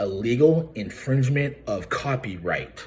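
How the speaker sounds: very slow, deliberate, drawn-out, word-by-word delivery. Speaker repeating a phrase once again for someone addressed directly, said really slow. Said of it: "I'll say it really slow for you".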